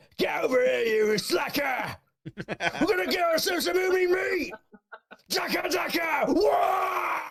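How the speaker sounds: very high screaming orc voice, long wah. Asked by the others to do an orc now, the speaker performs: screaming orc voice. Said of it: "do an orc now".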